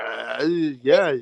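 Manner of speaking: put-on slurred, groggy speech. Mocking a boxer's slurred interview: imitating Errol Spence sounding groggy. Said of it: "he sound like he just woke up off of fucking taking some fucking NyQuil".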